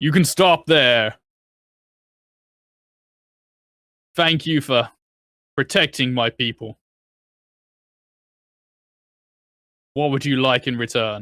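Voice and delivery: big, loud, booming proclaiming voice. Voicing the audible voice that greets the party at the gate, booming voice. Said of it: "it's kind of a booming voice".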